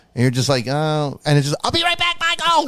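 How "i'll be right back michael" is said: very high-pitched voice, pitch pushed way up. Imitating an actor's shouted line: high-pitched Corey Haim voice. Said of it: "he would get the high pitch".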